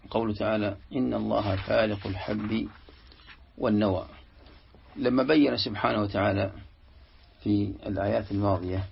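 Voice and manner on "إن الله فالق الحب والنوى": ordinary talk, nothing marked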